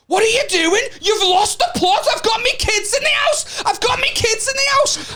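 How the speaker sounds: very high, shrill, loud, rising screaming outburst. Retelling a street row, quoting a woman outside: imitating a woman screaming. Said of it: "starts screaming".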